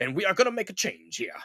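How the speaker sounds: sermonizing southern preacher cadence. Mocking a man who suddenly talks differently, the speaker imitates a southern preacher. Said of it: "he talks like a southern preacher".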